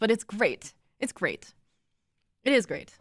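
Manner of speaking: sincere but sarcastic-sounding tone. Speaker insisting they are not being sarcastic; sincere but sounds sarcastic. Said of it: "I know I sound sarcastic".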